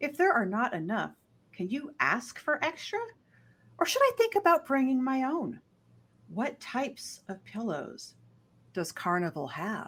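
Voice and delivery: high, swooping synthetic AI assistant voice. Reading out a written question aloud: AI voice. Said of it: "you went into your A I voice there".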